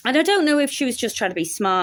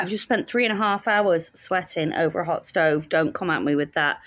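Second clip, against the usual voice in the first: usual speaking voice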